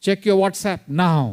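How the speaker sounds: loud hurried voice. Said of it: "it's loud, it's fast".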